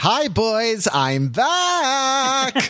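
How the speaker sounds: campy, flamboyant shout, very high, slow, stretched. Retelling a character's line at the kill shot: imitating a campy shout. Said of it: "then he shouts this, like, campy".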